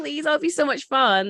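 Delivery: put-on high, childlike pleading like a little kid. Retelling how someone begged to go to the rifle range, imitating childlike pleading. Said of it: "like a child, like pleading".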